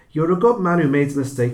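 high, loud, reassuring dog voice.

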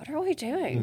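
high, hushed half-whisper aside. Retelling being asked to co-chair, the speaker re-enacts half-whispering to her. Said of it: "I'm like whispering to her".

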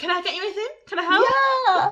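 sweet, eager, cutesy voice. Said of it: "he was like".

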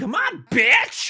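squeaky, very high, loud put-on voice. Retelling what she says on a talk show, the speaker tries imitating her voice. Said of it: "Should I try to do her voice?".

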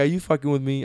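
ordinary talk

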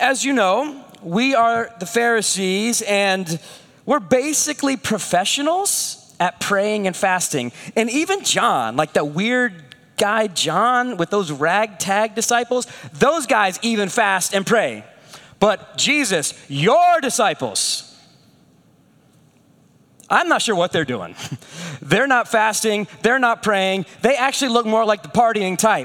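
ordinary talk, nothing marked

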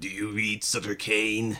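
hushed madman voice with a three-dimensional quality. Recounting a scene, imitating the axe-wielding madman's special 3D-quality voice. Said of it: "It has a kind of 3D quality to it. It goes like".

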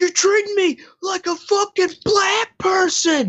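put-on, very high-pitched, loud yell. Retelling a clip of a man yelling at four cops: imitating someone yelling. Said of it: "He yells that out loud".

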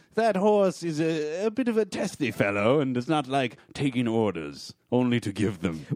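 olde-worlde, courtly, royal courtier manner. Answering about the spelling horse in role: pretending to be from the Renaissance. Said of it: "so you're pretending to be from the Renaissance".

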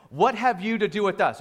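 ordinary delivery

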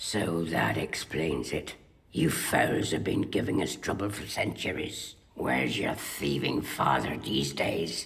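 put-on gruff Irish accent. Film scene, the commander speaking to Artemis Fowl: Commander Root's gruff Irish accent. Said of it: "She's doing a gruff Irish".

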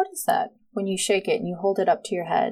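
ordinary delivery

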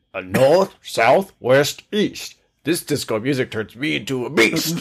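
put-on gorilla, big-ape voice. Sharing a just-written lyric with the others, performed in a gorilla voice. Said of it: "I'm going to try to do it in a gorilla voice".

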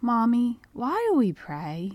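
put-on honey-sweet, sing-song, honestly curious child voice. Retell how he asked his worn-out mother a question on a trying day, imitating a super sweet, curious voice. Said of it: "in his super sweet, dripping with honey, but honestly curious voice".

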